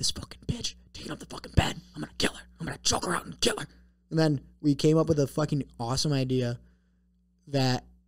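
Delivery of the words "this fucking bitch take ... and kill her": fast, hushed whisper under the breath. Speaker retells plotting with someone in his room during a nap, retelling a whisper.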